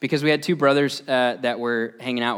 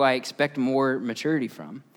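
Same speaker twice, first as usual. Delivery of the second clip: usual speaking voice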